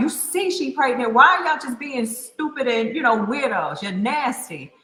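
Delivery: put-on ten-year-old child voice shouting, yelling. Retelling how her ten-year-old brother yelled at men hollering at her, imitating him yelling. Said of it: "is just yelling at them like".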